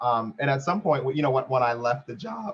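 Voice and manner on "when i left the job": voice cracking. Starting to tell about leaving a job: voice cracking. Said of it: "that voice crack".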